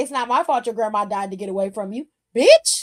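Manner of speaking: nasty, jeering, taunting tone. Imitating a wrestler taunting an opponent about a dead grandma: AJ Lee taunting impression. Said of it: "She's like".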